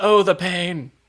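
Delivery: put-on British accent. Acting out a character who tries to be like a classically trained actor, Kelsey Grammer faux British accent. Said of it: "a Kelsey Grammer faux British accent".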